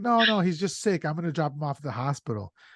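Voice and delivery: fast, casual, offhand delivery. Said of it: "I love how he's playing it off".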